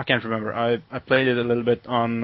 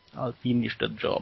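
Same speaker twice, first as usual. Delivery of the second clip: fake Eastern European accent, much quieter; 8 dB quieter than usual. Trying out a voice during a conversation, in a put-on eastern european accent. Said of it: "I really sound more um, Eastern European".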